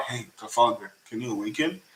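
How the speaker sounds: quiet, half-whispered voice. Acting out a scene where Kid asks Law a question: imitating Kid half-whispering. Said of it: "he just whispers to Law".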